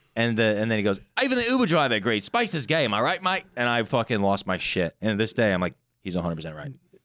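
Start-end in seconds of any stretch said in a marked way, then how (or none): 1.2-3.4 put-on Australian accent, much higher, louder. Speaker retells what a dude said out loud: Australian accent. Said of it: "in an Australian accent".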